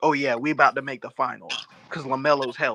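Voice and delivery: ordinary talk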